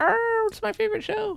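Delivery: high-pitched howling dog voice. Imitating a dog that watches the show on YouTube: imitating a howling dog. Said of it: "a dog howling that's listening to it".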